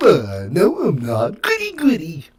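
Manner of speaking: high, swooping cartoon voice, pitched way up, drawn out. Acting out a cartoon exchange about Fruity Pebbles: Barney Rubble voice. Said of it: "Wrong Barney".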